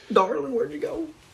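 put-on very high, thick, laid-on country accent. Quoting a character asking where she went, in a thick country accent. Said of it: "It's a thick country accent".

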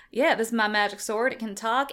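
ordinary talk

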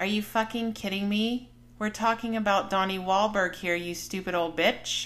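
normal talking voice

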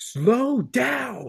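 piercing, shrill aggressive scream at top volume. Retelling a woman in her driveway screaming at the speaker driving past, retelling an aggressive scream. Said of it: "like a really aggressive voice".

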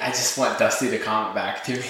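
ordinary delivery

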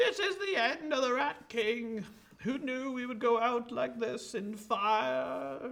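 very high, loud, drawn-out, stretched dying scream. Voicing the burning Rat King as he begins screaming in flames: screaming in character. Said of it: "begins screaming".

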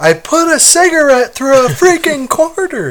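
mock very high bragging yell, rising along the line. Retelling a scene where Michael yells: imitating Michael yelling. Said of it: "he yells".

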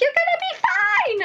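very high-pitched, calm, reassuring voice. Retelling own past reassuring words: imitating own high-pitched voice. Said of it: "I had this high-pitched voice on me the whole time".

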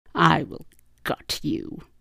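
very slow, rasping, rough snarl. Narrator reads a character threatening the mech who called him traitor, snarling. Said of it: "he snarled".

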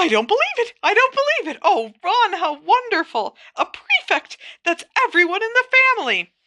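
very high, swooping, excited shriek of delight. A mother learns her youngest son is a prefect: shrieking with excitement. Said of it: "let out a shriek".

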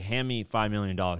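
ordinary delivery

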